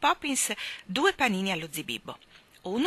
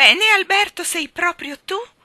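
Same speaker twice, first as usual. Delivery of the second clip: very high, very loud, cheerful, joyful shout; 10 semitones higher, 12 dB louder than usual. Mrs. curry greeting an arriving man, alberto, with a cheerful cry. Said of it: "Gridò la signora Curry con allegria".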